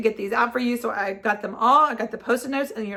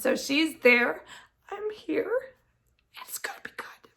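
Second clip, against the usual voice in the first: breathy ugly crying, sobbing through the words; 5 semitones higher, 5 dB quieter than usual. Speaking to viewers in a video, ugly crying. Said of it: "I'm sorry for ugly crying".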